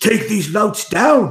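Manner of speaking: grunting bellow, pitched very high. Voicing a fighter who orders his men to attack: bellowing an order. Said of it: "he grunts and bellows to his men".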